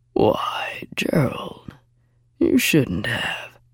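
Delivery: mocking, deep, very slow, whispered, breathy rumble. Locke, inside the room, greets the captain as the men bring her in, deep rumbling voice. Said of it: "a deep voice rumbled".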